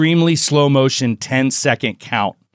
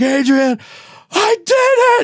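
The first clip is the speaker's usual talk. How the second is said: mock, very high-pitched, very slow, drawn-out sobbing scream; 3 dB louder than usual. Speaker retells a sports movie ending, the battered man calling out; imitating screaming and crying. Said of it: "he's just like screaming and kind of crying".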